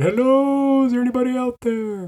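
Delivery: high, echoing, far-carrying call-out yell.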